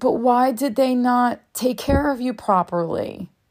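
put-on innocent, compassionate, curious, gentle, high little-boy voice. Retelling what the speaker's little boy asked, imitating a compassionate child. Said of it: "goes with such compassion".

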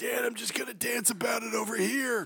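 put-on gruff little boy voice. Recapping a film scene, voicing the son answering his dad in a gruff boy voice. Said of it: "The gruff-voiced boy".

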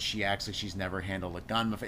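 plain

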